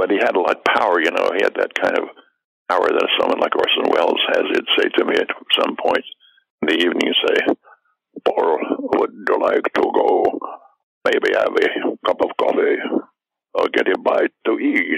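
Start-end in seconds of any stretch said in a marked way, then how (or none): 8.2-15.0 slow, very important-sounding voice. Retelling how a dinner companion asked to leave, imitating Max von Sydow. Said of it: "he sounded a little bit like Bela Lugosi".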